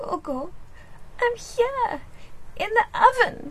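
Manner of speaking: small, tiny, trembling, quivering, very high voice. Narrator reading the youngest kid answering Gogo from the oven, tiny, quivering voice. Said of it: "answered in a tiny, quivering voice".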